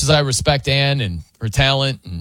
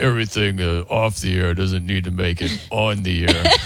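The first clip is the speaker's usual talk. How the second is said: very deep, low, put-on male voice; 7 semitones lower than usual. Imitating Coop brushing off a question about an off-air story: Coop impression. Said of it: "let me do my Coop impression".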